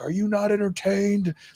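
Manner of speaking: acted very high, shrill scream. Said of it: "He was just screaming".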